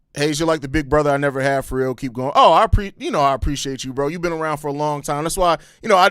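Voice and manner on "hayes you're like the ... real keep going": ordinary delivery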